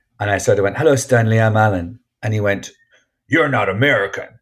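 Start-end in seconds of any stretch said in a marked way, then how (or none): 3.3-4.3 really aggressive, hostile snapping voice. An actor retells what he was told on set, imitating someone really aggressive. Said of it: "like that, really aggressively".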